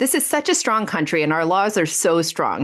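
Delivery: ordinary delivery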